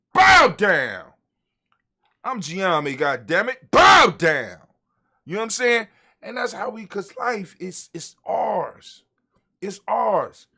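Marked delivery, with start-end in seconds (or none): 0.1-4.5 very loud, commanding, full-authority voice. Speaker showing how to tell life to bow down, with authority. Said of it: "You gotta say it with some authority".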